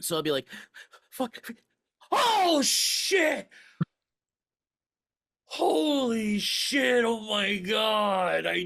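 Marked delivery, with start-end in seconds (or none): 1.1-8.6 exhausted outburst, pitched higher. Acting out his own reaction to beating a hard game boss. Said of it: "this is my impression of what happens when I beat one of those bosses".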